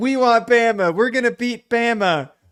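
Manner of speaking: very high, piping voice. Quoting a Vanderbilt player's boast from years ago, in a high-pitched voice. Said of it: "he said it kind of like that with like a high pitched voice".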